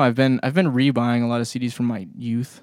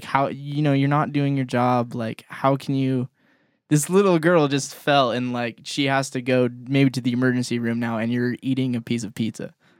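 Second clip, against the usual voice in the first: usual speaking voice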